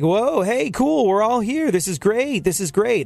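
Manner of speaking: high, gregarious, glad and sociable tone. Doing an impression of Funkhauser out socially at a gathering: imitating Funkhauser at parties. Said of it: "my impersonation of Funkhauser".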